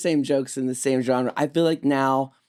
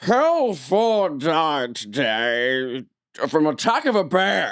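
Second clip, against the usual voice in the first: slow anchorman delivery with "today" drawn out. Retelling a comedy sketch's fake news story: Dana Carvey's Walter Cronkite impression. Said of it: "a pretty good impression of Dana Carvey doing an impression of Walter Cronkite".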